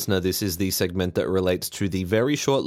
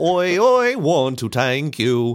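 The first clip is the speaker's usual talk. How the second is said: put-on high, loud, very slow, heavy Irish accent; 7 semitones higher, 5 dB louder than usual. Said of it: "My impression of Irish [name]".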